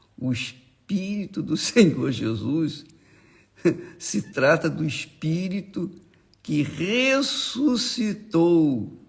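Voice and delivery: slow, joyful laughter through the words.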